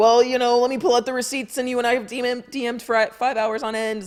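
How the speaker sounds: mock, very high, loud, flying-off-the-handle anger. Mocking people who fly off the handle when players respond: imitating someone flying off the handle. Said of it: "they fly off the handle and are like".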